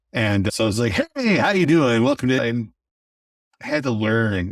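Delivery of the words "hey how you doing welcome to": DJ announcer voice, higher and faster. Podcaster recalling how they first opened their podcast, in a radio dj persona voice. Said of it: "I brought my D J persona with me".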